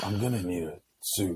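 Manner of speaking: very slow, drawn-out film-star delivery. Joking about going up to people: Keanu Reeves impression. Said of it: "You start going up to people".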